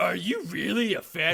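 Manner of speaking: high cartoon voice. Questioning the other speaker, who doesn't know the film's year, in a Muscle Man voice. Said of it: "Why do I sound like Muscle Man from Regular Show when I'm doing that voice".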